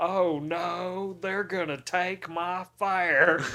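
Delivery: awful loud, high Texan drawl, stretched no. Recounting an episode where a pretentious British character does the worst Texan accent. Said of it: "he puts on like the worst Texan accent".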